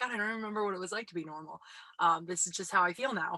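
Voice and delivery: ordinary talk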